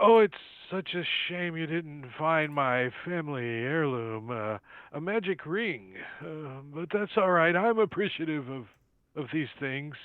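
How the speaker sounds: dejected let-down tone. Voicing Sildar as his head droops, missing his heirloom: disappointed Sildar voice. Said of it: "you see his head kinda droop down".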